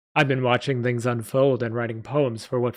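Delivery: ordinary delivery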